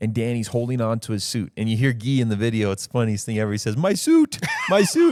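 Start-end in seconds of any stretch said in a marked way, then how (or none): 3.8-5.1 put-on very high, loud, drawn-out Brazilian Portuguese accent. Retelling what Guy says in the video as Danny holds on, imitating Guy's Portuguese Brazilian accent. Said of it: "He's got his Portuguese Brazilian accent".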